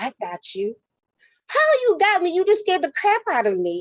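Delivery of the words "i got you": soft, silky, smooth, quiet seductive bedroom voice. Retelling how a character crept up behind someone: imitating a smooth, quiet bedroom voice. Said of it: "he comes with his bedroom voice".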